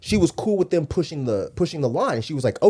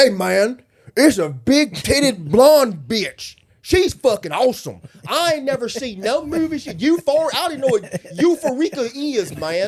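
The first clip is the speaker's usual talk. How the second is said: mocking put-on voice, higher pitch; 8 semitones higher than usual. Mocking how right-wingers react to an ad: imitating a MAGA supporter. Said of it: "they're just like".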